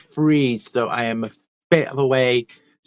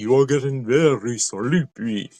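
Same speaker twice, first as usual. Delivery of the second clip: slow, drawn-out, lulling hypnotist voice. Joking about reading like a hypnotist: hypnotist voice. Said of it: "like a hypnotist".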